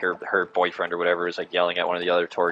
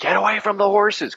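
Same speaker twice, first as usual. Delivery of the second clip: high, pitched-up shouting; 3 dB louder than usual. Retelling warning a woman whose dog neared the horses on a tour, retelling yelling a warning. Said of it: "I was yelling".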